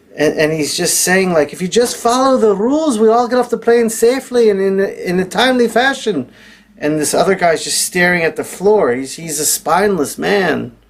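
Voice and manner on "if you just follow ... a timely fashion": put-on Scottish accent, pitched up. Retelling what a Scotsman on a plane said: imitating a Scottish accent. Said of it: "I'm gonna try to do my accent too".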